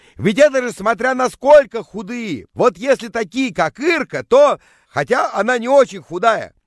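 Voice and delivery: loud, high-pitched voice. A man answers his friend's question in front of the girls, just as loudly. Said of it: "Не менее громко отвечал он".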